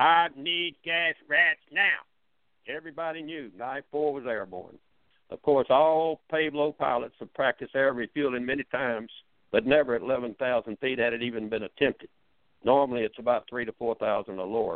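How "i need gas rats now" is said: put-on high, drawling Georgia accent, pitched up. Recounting his son on the radio calling for fuel: imitating Mike's hollered Georgia drawl. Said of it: "hollering his best Georgia drawl".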